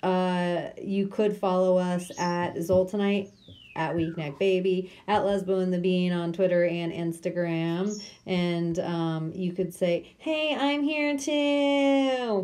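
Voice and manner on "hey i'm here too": very slow, high put-on voice, stretched overly long. Suggesting what followers could say online, in a Kevin Hart impression. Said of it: "That's my uh, Kevin Hart um, impression".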